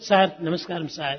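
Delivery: soft, low, humble, polite, respectful voice.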